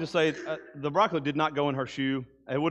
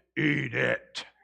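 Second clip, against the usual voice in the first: put-on low, guttural voice. Retelling what a woman said to the speaker, imitating her low, guttural voice. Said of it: "She took that low, guttural voice".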